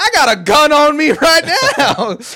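shrill, very loud, high-pitched screaming. Retelling a neighborhood confrontation, the speaker quotes a man threatening a lady, imitating him screaming. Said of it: "He's just screaming at this lady".

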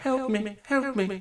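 faint distant cry. A narrator describes a faint voice calling from a distant house: faint voice. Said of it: "you hear a faint voice saying".

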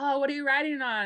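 plain

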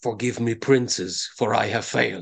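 muttered under the breath. Voicing an assassin holding up a jar of sand: muttered under his breath. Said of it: "he hears under his breath".

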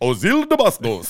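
slow, loud, thick, rolled mock Spanish accent.

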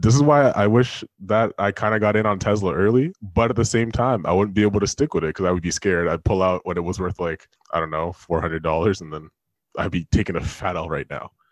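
very deep, extra-low voice. Speaker still in deep voice mode, chatting with others, very deep voice. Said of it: "while I'm still in deep voice mode".

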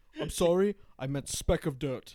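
put-on British-sounding, British-tinged accent. Acting out a leader correcting his slip in a comedy bit: British-sounding accent. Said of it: "That sounded British".

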